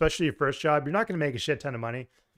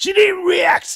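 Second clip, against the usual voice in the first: very high, very loud shrill yell in put-on voice; 11 dB louder than usual. Showing the viewers an impression of a friend: Jade impression. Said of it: "That's my Jade impression".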